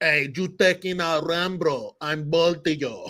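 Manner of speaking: slow, thick Spanish-accented shout.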